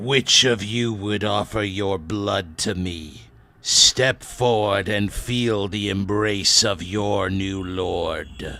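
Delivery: loud, slithery, vulgar abyssal voice. A voice from a skeleton speaks in the language of the abyss; slithery, vulgar abyssal voice. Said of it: "a voice spoken in the language of the abyss, as slithery and vulgar as it sounds".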